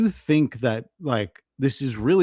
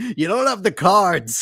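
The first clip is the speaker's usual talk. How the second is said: mock angry yell, pitched higher; 6 semitones higher, 4 dB louder than usual. Retelling an angry meeting at Zelensky: imitating Trump and Vance yelling. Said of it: "Trump and Vance yelling at Zelensky".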